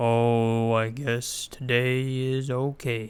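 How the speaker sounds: very slow, low donkey voice, drawn-out oh. Contrasting anxiety's chatter voice, demonstrate in a low, slow Eeyore voice. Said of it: "the low and slow uh, Eeyore voice".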